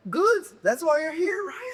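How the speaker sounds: high-pitched put-on Dutch accent. Retelling what a guy said as they walked out, imitating his accent. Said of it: "You're doing the accent with it too".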